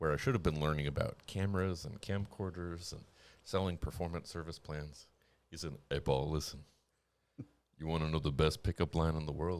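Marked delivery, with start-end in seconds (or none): 5.9-9.6 put-on deep booming voice, lower. Retelling what a coworker said while training: imitating Terry's deep booming voice. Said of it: "this deep, booming voice".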